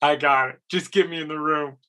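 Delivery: play-acted, laughing running through the words. Retelling own reply to an agent's warning, laughing while talking. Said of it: "And I'm laughing, going".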